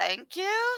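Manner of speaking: very high, small, frightened voice. Voicing a scared character thanking someone: scared voice. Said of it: "she looks very scared".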